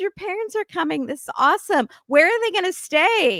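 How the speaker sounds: put-on fake-nice voice. Retelling how the parents greet Julia: imitating fake niceness. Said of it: "all nice".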